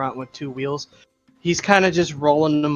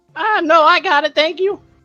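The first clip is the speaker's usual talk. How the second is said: put-on voice cracks, much higher, louder; 14 semitones higher, 7 dB louder than usual. Gnomish boy loading shelves answers an offer of help; puberty voice crack. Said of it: "he has like the most puberty voice crack ever".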